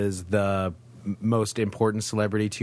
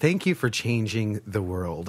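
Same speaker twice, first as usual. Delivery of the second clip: normal talking voice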